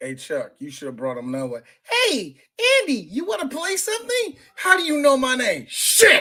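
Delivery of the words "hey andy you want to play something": high, swooping, cheerful, friendly sing-song toy voice. Retelling a movie scene, greeting Andy in the Good Guy doll voice. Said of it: "in the good guy voice".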